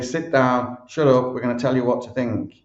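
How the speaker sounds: ordinary delivery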